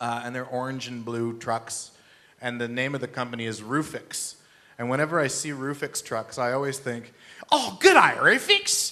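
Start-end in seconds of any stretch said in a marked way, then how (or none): 7.5-8.9 very high, loud bad Australian accent. Seeing the Roofix roofing trucks, calling out like a bad Australian TV show. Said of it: "from a bad Australian television program".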